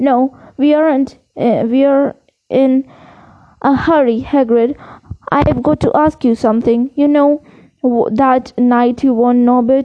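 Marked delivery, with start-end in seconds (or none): none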